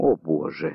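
quiet, low-key exclamation said under the breath. A listener reacts to news about a suspect's missing alibi, said quietly. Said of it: "тихо сказал [name]".

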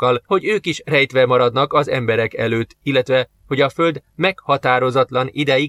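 ordinary delivery, nothing marked

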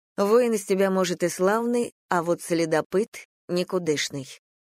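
ordinary delivery

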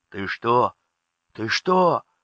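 scared, frightened, alarmed voice. The second adjutant asks the first adjutant, frightened. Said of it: "испуганно спросил".

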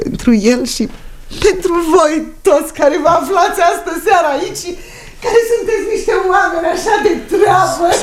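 on the verge of happy tears. Giving a toast to him and the guests on his birthday, close to tears of joy. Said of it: "că vine să plâng de fericire".

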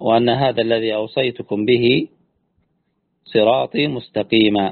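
normal talking voice

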